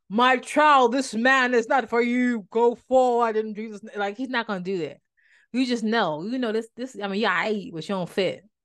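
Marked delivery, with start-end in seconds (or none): 0.1-3.8 put-on booming voice, slower. Teaching how to hear God, the speaker mimics an imagined divine voice: booming voice of God. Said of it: "this big booming".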